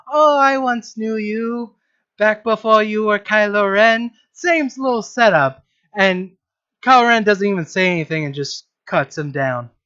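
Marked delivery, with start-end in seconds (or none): 0.1-4.1 goofy put-on voice, slower. Retelling a scene where Jar Jar walks up to Kylo Ren, in a stupid Jar Jar voice. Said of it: "his stupid fucking voice going".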